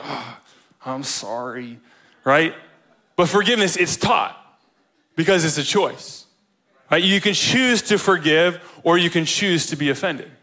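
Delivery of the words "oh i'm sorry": forced, hushed, soft voice through clenched teeth. Acting out a kid told by mom to apologize: speaking through clenched teeth. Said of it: "with like clenched teeth".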